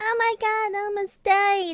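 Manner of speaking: put-on very high, small child's voice. Retelling tripping in a group meeting, the speaker quotes her own exclamation in a childlike voice. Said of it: "Who let a child in here?".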